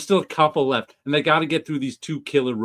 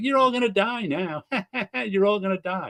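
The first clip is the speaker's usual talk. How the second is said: put-on high, gloating villain voice, taunting and threatening; 6 semitones higher than usual. Retelling a show scene, acting out the villain's line, mock-gloating villain. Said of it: "the Breaking Bad guy is just gloating".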